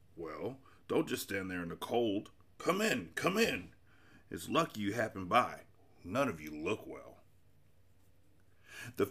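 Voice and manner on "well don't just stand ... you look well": hoarse, raspy, strange croaking voice. Narrator voicing a character greeting newcomers, in a strange croaking voice. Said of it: "he went on in a strange croaking way".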